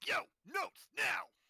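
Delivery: very high, loud, magically booming voice. A player acts out her character casting a spell, booming shout. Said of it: "cast thaumaturgy to have my booming voice".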